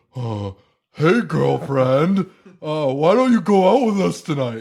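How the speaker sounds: man plainly faking a female voice. Speaker quoting a voiceover line, man faking a woman's voice. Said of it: "clearly a man doing a woman's voice".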